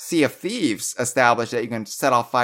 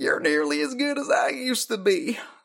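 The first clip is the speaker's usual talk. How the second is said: put-on Southern drawl, higher pitched; 10 semitones higher, 4 dB quieter than usual. Reading out more of Cranky's line: Bill Clinton and Matthew McConaughey blend. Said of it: "Bill Clinton slash Matthew McConaughey".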